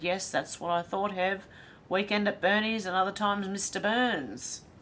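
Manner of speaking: ordinary delivery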